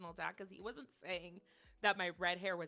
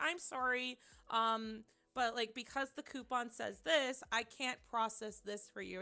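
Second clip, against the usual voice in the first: ordinary delivery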